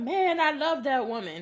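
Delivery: slow, weepy, tearful crying voice. Retelling a TV episode where he spoke about his partner: imitating someone crying. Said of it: "he was crying".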